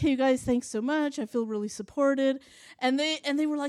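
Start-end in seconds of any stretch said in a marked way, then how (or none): none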